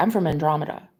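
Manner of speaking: put-on casual, offhand, nonchalant tone. Speaker retells a man's remark, imitating a nonchalant tone. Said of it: "he just says it so nonchalant".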